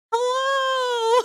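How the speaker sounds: very high, drawn-out catlike voice. Telling about a cat outside the speaker's door at night: imitating a cat saying hello. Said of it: "I swore this cat goes".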